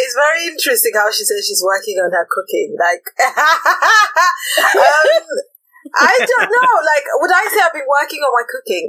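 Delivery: high, swooping talk through giggles. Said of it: "I'm laughing because".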